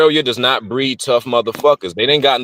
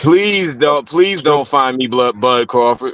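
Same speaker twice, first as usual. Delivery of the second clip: fake frightened begging tone. Joking that a boxer might come looking: mock scared pleading. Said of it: "I'm so scared".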